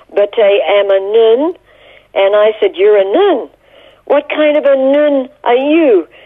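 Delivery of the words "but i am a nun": slow, thick, strong, put-on French accent. Retelling what a woman dressed as a nun replied: strong french accent. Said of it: "she said to me with a very strong French accent".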